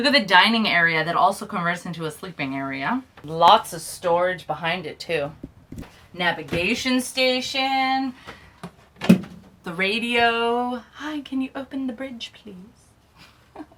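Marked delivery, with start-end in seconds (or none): 10.9-13.6 put-on British accent, very hushed, soft, high. Showing the boat's radio, the speaker pretends to make a call in a british accent. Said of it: "I have no idea why I did that in a British accent".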